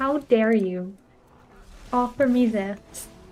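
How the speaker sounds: offended, outraged, indignant, pissed-off cat voice. Retelling offering food to a pet cat, voicing the pissed-off cat. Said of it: "he gets so fucking pissed off".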